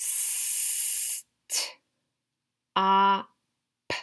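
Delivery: "stop" sounded out slowly, each sound pulled apart. Sounding out each sound of a word to get all four: sounding out slowly. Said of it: "say the sounds really slowly".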